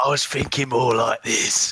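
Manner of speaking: strong, rough, gruff barbarian tone. Asked by the others for a good gruff character voice, trying out a gruff voice. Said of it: "your good gruff voice".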